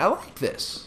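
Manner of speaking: breathy, half-whispered voice that cracks. Speaker talking about the creators who inspired him, voice cracking. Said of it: "That was a voice crack".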